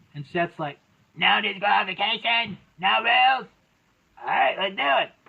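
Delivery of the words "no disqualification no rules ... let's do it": rough, creaky, raspy wrestler voice. Recapping a wrestling match, quoting a wrestler: Seth Rollins impression. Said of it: "I was trying to sound like Seth Rollins".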